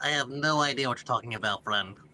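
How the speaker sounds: put-on nasal, squeaky voice. Messing with the others, replying in a Squidward-on-helium voice. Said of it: "just putting on a funny voice".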